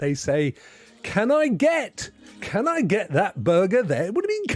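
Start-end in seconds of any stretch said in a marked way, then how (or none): 1.0-4.1 imitated American accent. Imitating people ordering a burger the new way: imitating an American accent.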